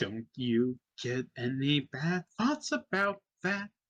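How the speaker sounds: little goblin butler voice, refined and fine. A goblin butler in a suit addresses a visitor, little goblin butler voice. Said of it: "a little goblin in a suit runs up between you and the mayor. / He's a short little goblin dressed in a fine suit. He has 2 daggers on his hips, / The goblin just looks at you. / Butler".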